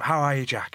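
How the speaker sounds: put-on adopted Irish accent. Retelling what an irish fan said on walking in: put-on irish accent.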